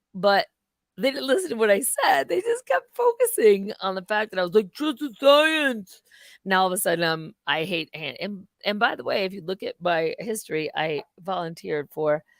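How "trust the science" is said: high, pitched-up puppet character voice. Speaker repeating the line people fixated on instead of listening, in a Muppet voice. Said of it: "it's a Muppet voice".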